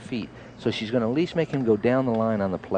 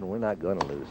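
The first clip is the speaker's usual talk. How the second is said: usual speaking voice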